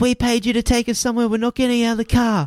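acted-out, very high, shrill screaming. Retelling how Kelly screamed at the men: imitating Kelly screaming. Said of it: "Kelly screams at them and says".

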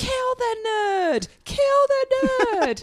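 put-on very loud, very high, very slow, drawn-out child's scream. Telling how the nephew reacted, imitating him screaming at the top of his lungs. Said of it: "screaming at the top of his lungs".

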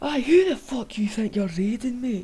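exaggerated Scottish accent. Acting out a Scottish player in the game Rust: exaggerated Scottish accent. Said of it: "Imagine Rust in Scottish".

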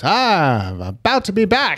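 very slow, stretched-out delivery with swooping high voice. Retelling a TV preview line by line: John Mulaney impression. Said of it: "This is my John Mulaney impression".

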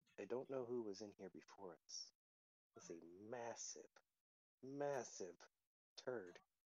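hushed half-whisper, quiet aside tone. A player voices McQuackens stepping back from a sleeping ooze, half-whispering. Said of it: "he's going to whisper".

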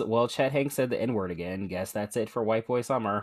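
ordinary delivery

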